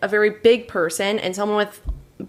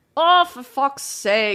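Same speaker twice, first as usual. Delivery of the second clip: put-on Irish accent; 4 semitones higher than usual. Asked to demonstrate his Irish accent, Irish accent. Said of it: "That was perfect".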